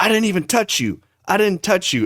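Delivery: put-on high, screamed voice. Retelling an airport fight, imitating the other man screaming back. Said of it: "they're just screaming in each other's face".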